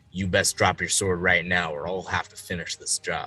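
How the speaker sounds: whispering in a put-on character voice. Threatening a grappled enemy in character, whispering in his ear. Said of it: "I'm a whisper in his ear".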